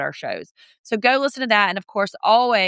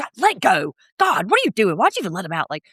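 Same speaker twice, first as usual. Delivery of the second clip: furious headmistress-style scolding with swooping pitch. Retelling a mad outburst in a stern principal voice. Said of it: "she used her principal voice".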